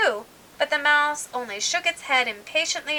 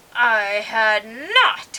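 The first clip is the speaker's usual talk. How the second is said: sharp, loud, very angry cry; 2 semitones lower, 5 dB louder than usual. Reading the story aloud, the Mouse answers Alice; sharp, very angry cry. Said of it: "cried the Mouse sharply and very angrily".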